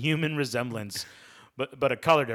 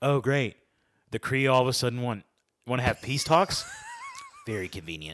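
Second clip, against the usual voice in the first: animated, swooping character voice; 4 dB quieter than usual. Reading a listener comment aloud the way Ryan would. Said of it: "I'm gonna read it like Ryan".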